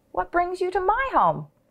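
exclaiming, high pitched. A woman opens her door and finds a little boy, exclaiming. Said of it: "Amu exclaimed".

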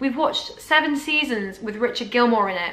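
ordinary talk, nothing marked

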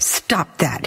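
sharp, hissed, hushed voice. Suzette hisses at Thais, who is rocking back and forth. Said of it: "hissed Suzette".

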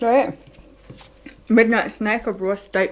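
speaking through a mouthful. Filming yourself eating raw meat as a snack, talking with your mouth full. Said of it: "I have my mouth full".

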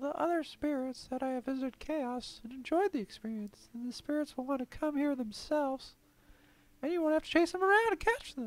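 very high, storybook-style put-on spirit voice. Reading a story aloud, voicing a spirit character: put-on spirit voice. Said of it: "That's my spirit voice".

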